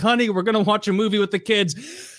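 fed-up, exasperated voice. Acting out a wife walking into the room: mock exasperated wife. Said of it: "exasperated, like, wife coming in the room".

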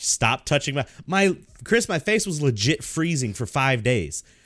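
plain

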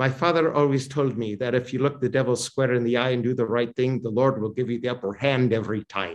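put-on Irish accent, Irish brogue. Retelling what a man once said to a cardinal, in an Irish brogue. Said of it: "he said in his Irish brogue".

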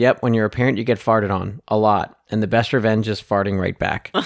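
ordinary delivery

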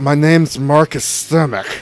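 mock, heavily slurred, boozy voice, words smeared together. Describing a man's voice, then saying his name as him, slurred Marcus Stimmick impression. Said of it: "it sounds like you're slurring".

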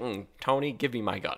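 put-on irritated, fed-up, pissed-off tone. Retelling a movie scene where a character gets angry: imitating an angry character. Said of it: "he gets all pissed".

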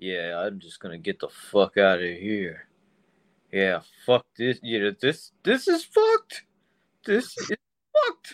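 lively, animated voice swooping up and down. Doing an impression of Tom for another speaker: Tom impression. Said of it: "that's my Tom impression".

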